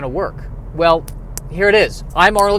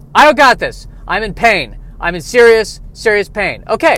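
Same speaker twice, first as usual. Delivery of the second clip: ordinary delivery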